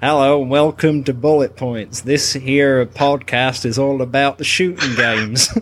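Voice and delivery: put-on American accent, podcast host style. Podcast host introduces the show to co-hosts as a bit, in an American accent. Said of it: "I'll introduce the show in an American accent".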